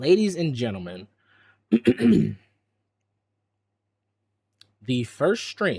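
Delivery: dramatic, theatrical pause. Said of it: "Dramatic pause".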